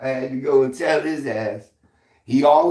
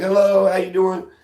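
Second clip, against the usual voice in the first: put-on friendly tone, higher; 5 semitones higher than usual. Speaker recounts always greeting the dad who walks by; retelling a friendly greeting. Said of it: "I always am real nice".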